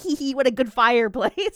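put-on, mock-excited character voice. Recapping an episode, a character turns on the fireplace; imitating an excited character. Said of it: "he's all excited".

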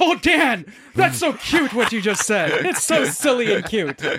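sneering, mocking, belittling tone. Acting out someone mocking Dan's words, retelling a mocking reply. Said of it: "I'm gonna mock what you said".

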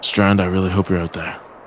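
muttered quietly under the breath. Muttering a hope to an absent ally: under his breath. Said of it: "Under my breath".

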